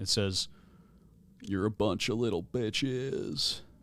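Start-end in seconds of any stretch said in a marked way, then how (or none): 1.4-3.6 very soft, gentle, calming voice. Narrating a voice from the opened void speaking to the players; very soft, calming. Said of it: "a very soft, um, somewhat calming voice".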